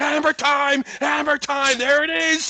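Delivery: sharp barking shout. Retelling how Greg called a punt on the phone: imitating Greg barking. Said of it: "So he's barking".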